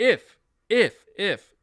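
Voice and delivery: heavy stress hammered on each if. Explaining they are not speaking definitively, stressing the word if. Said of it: "emphasizing the word if".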